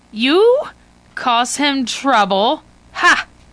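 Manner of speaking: slow, contemptuous, mocking, scornful laugh. The woman answers visitors who want to question Liwa: scornful laugh. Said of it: "the woman laughs scornfully".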